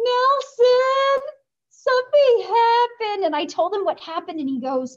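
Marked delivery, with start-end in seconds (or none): 0.0-3.3 mock very high, loud, sobbing, bawling wail. Retelling coming into the advisor's office after finding out, retelling bawling. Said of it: "I came into his office bawling".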